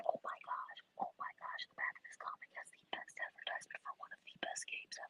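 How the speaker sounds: whispered, barely held-back excitement. Looking through an old comic, holding back a scream, whispering. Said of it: "I had to whisper because I was gonna scream it".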